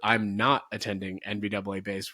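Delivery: normal talking voice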